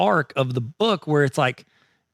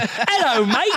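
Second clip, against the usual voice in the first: put-on Australian accent, pitched up; 9 semitones higher than usual. A podcaster acting out how the show's hosts sound, in a put-on Australian accent. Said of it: "this is my Australian accent".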